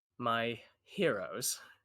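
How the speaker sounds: smiling slightly, half-sarcastic tone. Narrator voicing a woman greeting the group, said with a little smile. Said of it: "she says with a little bit of a smile".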